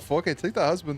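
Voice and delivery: put-on clumsy Irish accent. Repeating a line just heard, then admitting the accent fails: attempted Irish accent. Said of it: "I can't do an Irish accent".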